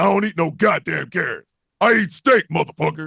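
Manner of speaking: villainous cartoon bad-guy bunny voice. Acting out a made-up villain bunny walking down the street: Villain Bunny voice. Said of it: "Villain Bunny is just walking down the street".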